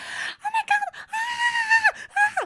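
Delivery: mock very high, very slow, drawn-out shrieks. Retelling how a desk mate reacted to moths: imitating someone screaming. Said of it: "she was screaming like crazy".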